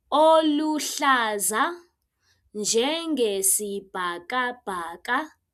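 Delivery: slow, careful pronunciation. Teaching a long word for a colour: said slowly. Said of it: "Let me say it slowly".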